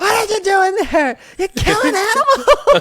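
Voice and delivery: very high, shrill, screeching screamed burst. Retelling how an actor re-entered and screamed a line: imitating a screamed line. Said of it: "screams that line of".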